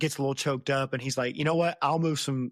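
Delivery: ordinary delivery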